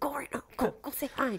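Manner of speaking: muttering through clenched teeth. Retelling urging a friend to go say hi: speaking through clenched teeth. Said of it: "speaking to her through my teeth".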